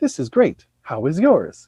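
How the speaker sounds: mechanical, robot-like android delivery. Retelling what someone says to an android over drinks, in android voice. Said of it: "in his android voice".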